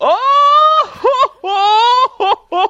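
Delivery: obnoxious, very high, loud howling laugh. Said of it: "something obnoxious, kinda like".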